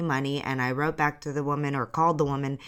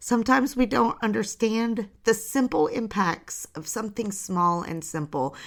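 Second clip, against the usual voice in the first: teary, pitched-up, choked voice near tears; 7 semitones higher than usual. Sharing a story, the speaker is close to crying again. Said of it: "I'm going to cry again".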